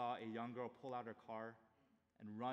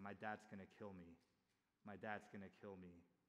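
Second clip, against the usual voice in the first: put-on hysterical sobbing voice, quieter; 2 semitones lower, 6 dB quieter than usual. Retelling a car crash where the young driver spoke: imitating hysterical crying. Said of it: "crying hysterically".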